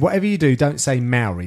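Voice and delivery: ordinary talk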